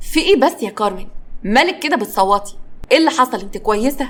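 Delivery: ordinary delivery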